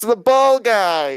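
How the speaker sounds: very high-pitched, loud shouting. Calling out suddenly while another speaker is talking: shouting. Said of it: "he just shouted".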